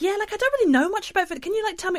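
very high, acted, feigned clueless tone. Retelling asking game shop staff about Wii Fit: imitating herself playing dumb. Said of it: "in character".

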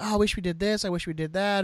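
plain

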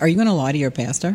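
plain

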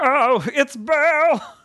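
very high, thrilled, puppet-like voice. Imitating a niece when she gets excited: imitating niece's excited Muppet-like voice. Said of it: "my niece has a very interesting voice when she gets excited".

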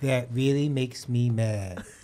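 slow cartoon-dog voice, every word drawn out. Doing an impression after being asked: Droopy Dog voice. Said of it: "one impersonation... of a cartoon character".

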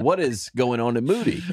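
ordinary delivery

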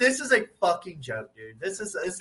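ordinary talk

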